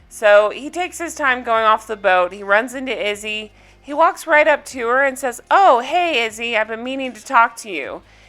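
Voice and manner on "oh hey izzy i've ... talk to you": mock disingenuous slimy fake-friendly tone. Retelling how a cast member greets a coworker: imitating a disingenuous slimy attitude. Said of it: "with the most disingenuous, slimy attitude".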